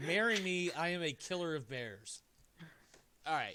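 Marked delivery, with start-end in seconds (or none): 0.1-2.2 slow, heavy, utterly sarcastic delivery. Reading back the marriage proposal card a player plans to send: incredibly sarcastic. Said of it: "I'm being incredibly sarcastic".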